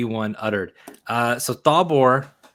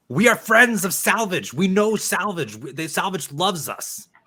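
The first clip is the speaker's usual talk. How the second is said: mighty high-pitched bellow from a huge throat; 8 semitones higher than usual. Thalbor rises from behind the bar and answers: Thalbor's mighty bellow. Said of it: "with his a, a mighty Athorian throat, he bellows and says".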